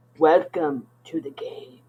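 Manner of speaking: disembodied voice from beyond. Voicing a voice from beyond greeting the players: voice from beyond. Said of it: "you hear a voice from beyond that says".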